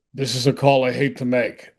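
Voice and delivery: ordinary talk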